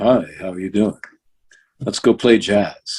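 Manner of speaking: smooth, slick, suave and seductive voice. Voice actor showing how he played Lex seducing Lois Lane, mock-seductive Lex voice. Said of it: "seducing Lois Lane in in the script".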